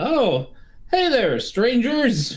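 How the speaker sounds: calling out loudly. Two strangers in a scene spot the others and wave, yelling a greeting. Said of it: "yell out".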